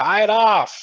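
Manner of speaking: high, shrill, full-volume, very loud shout. Narrating a game, the speaker voices his character calling across a chasm to his dwarf friend: shouting. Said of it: "And he shouts".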